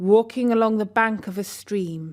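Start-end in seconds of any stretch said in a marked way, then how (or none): none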